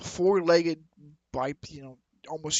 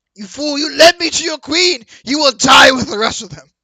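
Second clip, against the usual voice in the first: very high, shrill, very loud yell; 10 semitones higher, 17 dB louder than usual. Voicing a creature who yells at a player: yelling at a player. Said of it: "he's going to yell at you".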